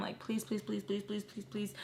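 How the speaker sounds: play-acted, fast, demanding, pleading and insisting. Retelling a woman pleading to be taken along, mock demanding plea. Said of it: "she's like demanding but like asking at the same time".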